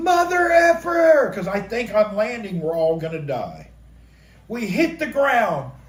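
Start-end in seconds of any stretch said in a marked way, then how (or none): 0.0-1.3 high, loud, slowed terrified yell. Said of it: "and I'm yelling".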